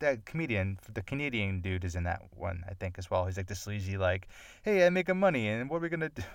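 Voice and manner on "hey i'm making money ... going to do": bad fake Italian accent, pitched up. Describing a sleazy movie character played by a Canadian comedian, in a terrible Italian accent. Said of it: "that was a terrible Italian accent".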